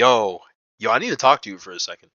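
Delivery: put-on stern, firm, unshy, no-nonsense tone. Retelling confronting a woman right after a meeting, retelling a stern demand. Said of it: "in a stern ass voice".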